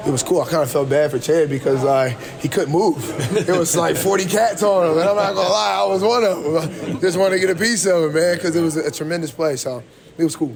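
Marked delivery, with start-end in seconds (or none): 4.0-8.1 high, excited rush of words, pitch jumping up. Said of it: "you could just hear the excitement in his voice".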